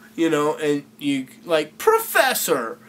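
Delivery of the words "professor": very high-pitched, doubtful, questioning tone. Showing how to question a professor: slightly higher-pitched doubting voice. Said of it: "you kinda raise your voice a little bit".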